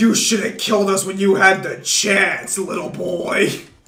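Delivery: slow bear voice with a vengeful tone.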